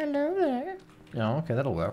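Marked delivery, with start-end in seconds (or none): 0.0-0.8 very high put-on lady voice. Speaker tries out pretending to be a lady; pretending to be a lady. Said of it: "I'll pretend to be a lady".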